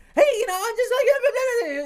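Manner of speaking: high, loud yelling while laughing.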